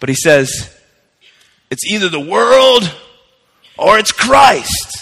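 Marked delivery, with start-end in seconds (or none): 1.7-5.0 put-on high, slow, measured delivery. Quoting the great Billy Graham's words, in a Billy Graham voice. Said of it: "I'll try to say it the way he does".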